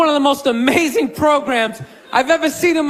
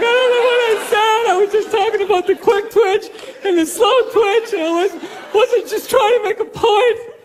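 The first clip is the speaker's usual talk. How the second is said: mock sobbing, blubbering, high-pitched tearful crying voice; 8 semitones higher than usual. Imitating a fired man on tv explaining himself, imitating a man crying. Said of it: "He's crying".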